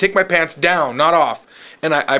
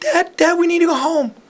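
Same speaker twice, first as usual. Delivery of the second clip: put-on very high-pitched, pleading young boy voice; 13 semitones higher than usual. Retelling begging his waiting dad to go home at twelve, in a high-pitched young boy voice. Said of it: "in my high-pitched young boy voice".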